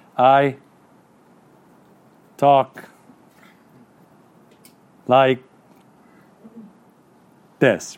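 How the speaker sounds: very slow, sluggish, drawn-out sloth voice. Telling an audience what sloths are like, in a Zootopia sloth voice. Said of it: "Maybe you saw sloth in the movie Zootopia".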